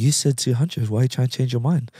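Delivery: very calm, unruffled, gentle, close-in talking. Retelling how Manu talked right close to a man's face: imitating Manu's calm, soft voice. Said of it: "very calm, very soft voice".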